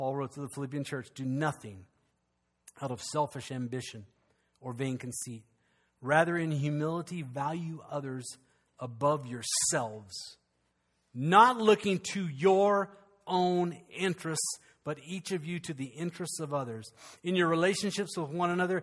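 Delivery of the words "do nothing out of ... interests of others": slow, unhurried, deliberate reading voice. Reading a scripture passage aloud to listeners, read it slowly. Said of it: "I'm going to read it slowly".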